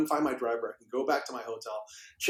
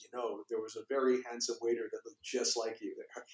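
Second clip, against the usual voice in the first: hushed, soft half-whisper, very close; 6 dB quieter than usual. Retelling what someone said at a reception line: retelling a half-whisper. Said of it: "he whispers in my ear".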